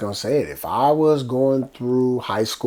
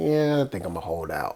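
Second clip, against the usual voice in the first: play-acted casual, offhand, dismissive, couldn't-care-less tone; 3 semitones lower, 4 dB quieter than usual. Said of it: "but it was like".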